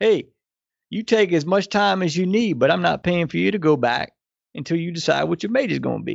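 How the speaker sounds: put-on heavy Louisiana Cajun accent. Quoting a man who was paying for the speaker's schooling: Cajun accent. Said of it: "in his Cajun accent".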